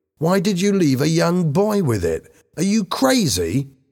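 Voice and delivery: angrily. Bobby, after the money bag is lost, questions the others angrily. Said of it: "said Bobby angrily".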